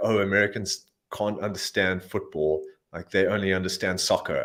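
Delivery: ordinary delivery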